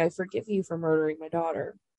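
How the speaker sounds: usual speaking voice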